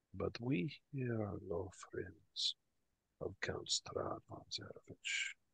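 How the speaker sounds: dropped, hushed, secretive voice, almost a whisper. Retelling what a man said to the speaker's character, in a slightly lowered voice. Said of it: "he lowers down his voice a little bit and he says".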